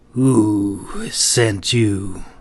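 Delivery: low, ragged voice, drawn-out "who". Reading a story, the guard on the right questions the glove in a low, ragged voice. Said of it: "responded in a low, ragged voice".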